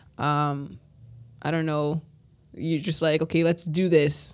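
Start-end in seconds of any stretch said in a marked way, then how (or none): 3.2-4.4 mock encouraging, cheering tone. Showing how someone might rally others: imitating an encouraging rally. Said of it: "with, like, an encouragement".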